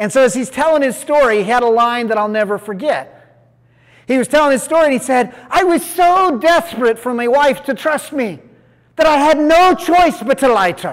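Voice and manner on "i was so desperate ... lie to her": heavy put-on Scottish accent, strong and pitched up. Quoting a man from Scotland telling his story in group: imitating a strong Scottish accent. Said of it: "he had a deep Scotland, Scottish accent".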